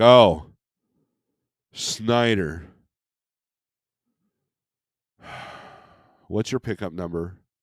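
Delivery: loud, drawn-out rude tone full of attitude. Retelling how a worker at a pallet place spoke: imitating someone with an attitude. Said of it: "this guy right away had this attitude".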